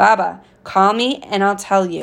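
ordinary delivery

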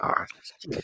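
breathy, hushed, muttered half-whisper under the breath. Retelling a documentary interview, imitating the interviewee saying sorry. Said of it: "the way he says, "Ah, shit," it was so funny".

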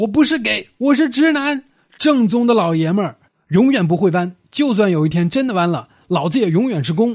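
roaring yell, high and loud.

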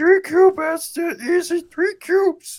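squeaky, very high, loud character voice. Asked what 3 cubed is, answering in a high-pitched Bubs voice. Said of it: "This is high pitched Bubs".

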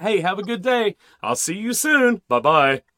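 very loud, bright radio-host voice. Showing how the speaker usually signs off, in that radio voice. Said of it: "that radio voice".

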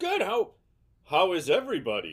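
polished, bright, swooping professional voice. Answering a greeting after being introduced on the podcast: professional voice. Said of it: "we get the professional voice from him?".

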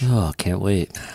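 sarcastic, pretending to be excited. Reacting to the event announcement: sarcastic. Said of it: "I can sense the sarcasm".

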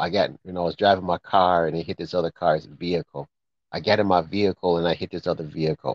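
ordinary talk

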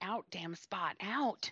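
very slow mumbling under the breath. Imitating a character wiping off her hand: imitating muttering under breath. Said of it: "She's muttering".

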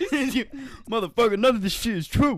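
very high, very loud blasting outburst. Joking about a flat-earther player in Space Jam: Kyrie Irving impression. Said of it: "Is that what he sounds like?".

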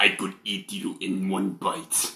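deep, soft put-on Ukrainian accent. Imagining how the barbarian from the story says his line, in a deep Ukrainian voice. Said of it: "I just imagine it like a deep Ukrainian voice".

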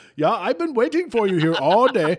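awful put-on German accent, loud and high. Speaker playing the person from germany who will meet the group, terrible german accent. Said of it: "that was a terrible terrible german accent".

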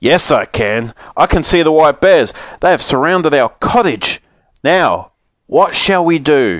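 loud, gruff, growled father bear voice. Narrator voices the father bear looking out at the snowstorm, growling loudly. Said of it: "Suddenly the father bear gave an angry growl and pointed to his chair. / growled the father bear, patting the little girl on the back. He was very fond of her. / he said. / Said the father bear in a g".

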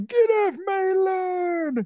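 put-on crying old-man whine, very high pitch, very slow. Describing an old man's way of talking: old man voice. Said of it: "it's like an old man".

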